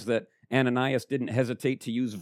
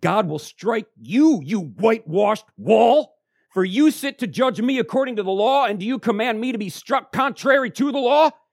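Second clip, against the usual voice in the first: mock heated, fervent, very high, very loud, shrill; 10 semitones higher, 9 dB louder than usual. Reading verse 3 aloud, the speaker acts out a fervent retort to a judge. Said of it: "trying to say it with as much fervor".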